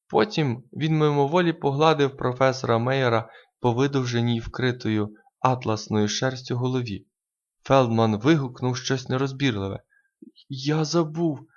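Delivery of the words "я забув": sheepish, abashed, embarrassed exclamation. [name] apologizes after Feldman's outburst, an embarrassed apology. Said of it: "зніяковіло вибачився Касиді".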